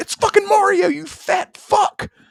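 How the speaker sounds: mock stretched-out yell, very high and drawn-out. Retelling yelling at the TV at quiz show kids: imitating own yelling at TV. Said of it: "yelling at the T V".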